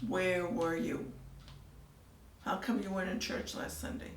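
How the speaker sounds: usual speaking voice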